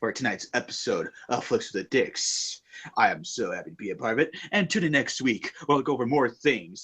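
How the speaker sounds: low, put-on sexy, seductive voice. Signing off the episode in a put-on sexy voice. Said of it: "I'm going to end myself with a sexy voice".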